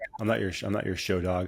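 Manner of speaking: speaking as a dog. Speaking as the other speaker's dog who growled for attention: voicing the dog. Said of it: "now she's like".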